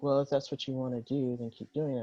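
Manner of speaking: patronizing, condescending, dismissive tone. Retelling how another person replied: imitating a condescending tone. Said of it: "came back condescendingly to me".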